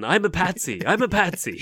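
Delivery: shrill, very high, loud shout. Acting out her smacking the judge: imitating someone shouting.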